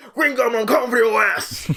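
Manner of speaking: high, loud promo shout. Speaker retells a hero grabbing the mic to challenge his enemy; WWE promo shout. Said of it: "like a W W E, like, opening".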